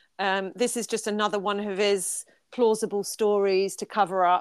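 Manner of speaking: usual speaking voice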